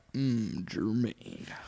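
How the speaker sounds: put-on whispered, breathy old-timey radio announcer voice. Suggesting how to announce the name jermaine, in old-timey radio voice. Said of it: "you gotta have like that old timey like radio voice".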